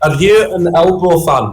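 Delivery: put-on Scottish-sounding accent. Retelling what a woman asked him, in a Scottish-sounding accent. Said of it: "What was that voice?".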